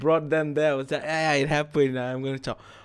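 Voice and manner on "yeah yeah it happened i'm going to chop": put-on relaxed nonchalant voice, lower pitch. Retelling what the guide said after shots were fired: imitating someone being very chill. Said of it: "How can you be so fucking chill".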